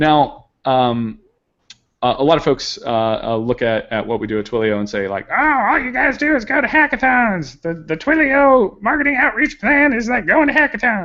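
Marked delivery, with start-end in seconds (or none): 5.3-11.0 odd, squeaky, very high put-on voice. Imitating people who say all they do is hackathons: strange voice. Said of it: "they usually have a strange voice".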